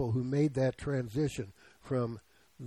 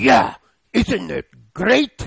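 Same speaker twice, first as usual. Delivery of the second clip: put-on very loud, high, gravelly Russian accent, belted out; 5 semitones higher, 12 dB louder than usual. Retelling Aunt Lizzie's reply on the phone: imitating Aunt Lizzie, gravelly Russian accent. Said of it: "gravelly voice, Russian accent".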